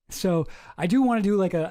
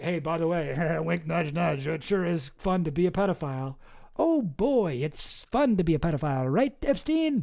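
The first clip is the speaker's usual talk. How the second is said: mock knowing, sly, winking insinuating tone. Reading out names in a birthday book, imitating everyone: mock sly winking tone. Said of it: "And everybody's being like".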